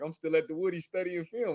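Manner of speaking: ordinary talk, nothing marked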